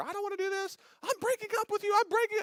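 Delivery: very high, terrified shrieking. Retelling a man on a roller coaster breaking up with his girlfriend: imitating screaming bloody murder. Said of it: "he's screaming bloody murder".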